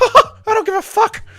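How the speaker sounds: very high, loud, mouse-like cartoon voice. Reading a chat request, doing Mickey Mouse choking someone out: Mickey Mouse voice. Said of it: "Mickey Mouse does not respect the tap".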